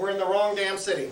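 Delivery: plain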